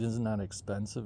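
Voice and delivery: ordinary talk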